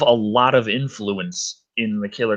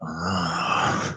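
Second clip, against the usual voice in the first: put-on sultry moan, lower and quieter; 6 semitones lower, 6 dB quieter than usual. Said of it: "can you do a bedroom moan?".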